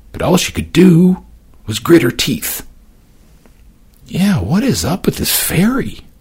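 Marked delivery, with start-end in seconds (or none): 4.1-5.9 soft murmur, smile in the voice. On a ferry ride, a man beside her murmurs with a smile. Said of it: "Sebastian murmured".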